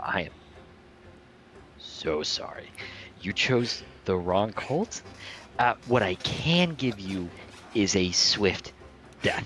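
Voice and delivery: slow, hushed, confiding slight whisper. Speaking just between me and the poor little person: slight whisper. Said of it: "I'm just gonna go like it just slightly whisper like no one else".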